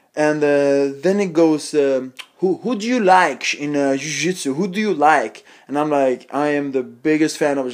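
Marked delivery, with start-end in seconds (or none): 2.4-5.5 put-on heavy Brazilian accent, laid on thick. Retelling a stranger's questions to him, in a thick brazilian accent. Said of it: "he talks with this Brazilian accent, really thick".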